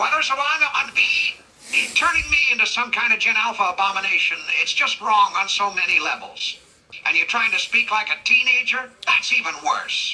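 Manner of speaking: ordinary talk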